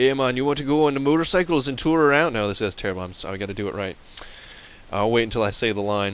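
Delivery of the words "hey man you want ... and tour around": higher, louder attempted Jamaican accent. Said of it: "should I try and say it in the accent".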